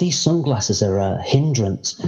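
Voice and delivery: plain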